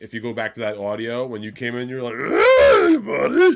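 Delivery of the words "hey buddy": very high, very loud, squealing puppet voice. Retelling how the other speaker came in: Fraggle Rock character voice. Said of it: "you sounded like a Fraggle Rock character".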